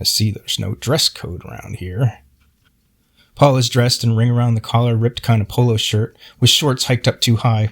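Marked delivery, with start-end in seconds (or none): 0.0-2.2 low, hushed mutter under the breath. Retelling what the tennis association head said on arrival: imitating someone muttering under breath. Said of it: "saying under his breath".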